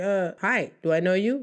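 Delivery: mock suspicious, wary German accent. Acting out a German answering a friendly stranger: imitating suspicious German reply. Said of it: "And you're like".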